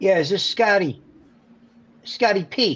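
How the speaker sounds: put-on New York accent. Retell a manager's phone call to Scotty P, in Jack Leitenberg's thick New York accent. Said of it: "N thick New York accent".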